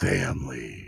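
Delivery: very low, rough voice. A host addresses the viewers of his show; Vin Diesel voice. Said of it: "in my Vin Diesel voice".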